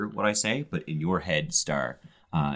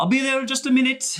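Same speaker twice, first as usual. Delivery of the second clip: very high, loud, carrying shout; 7 dB louder than usual. Playing a character, calling out across the lake, calling out loudly. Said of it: "out loud f- across the lake".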